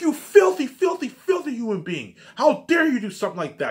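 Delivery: very high, shrill, crazed, out-of-control yelling. Retelling how the teacher scolded them over spitting: imitating the teacher yelling. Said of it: "yelling at me".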